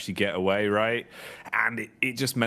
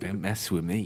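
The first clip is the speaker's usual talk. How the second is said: put-on mutter under the breath, quieter; 3 semitones lower, 4 dB quieter than usual. Acting out muttering to oneself while walking down the street: mock muttering under breath. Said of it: "just muttering under your breath".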